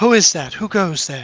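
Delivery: loud, put-on feminine woman's voice. Voicing someone behind heavy double doors calling out: put-on feminine voice. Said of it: "you would hear a feminine voice because I'm not good at female voices".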